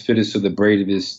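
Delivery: ordinary talk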